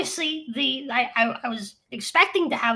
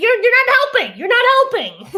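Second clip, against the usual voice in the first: very high, very loud, fed-up, exasperated voice; 11 semitones higher, 9 dB louder than usual. Retelling a stressed reply to an unhelpful suggestion: exasperated retort, retold. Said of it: "It's like".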